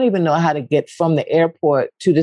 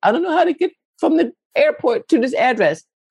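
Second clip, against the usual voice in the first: very high, whimpering boo-hoo sobbing; 10 semitones higher than usual. Retelling being lost on a plane to Paris, acting out own boo-hoo crying. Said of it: "boo-hoo crying".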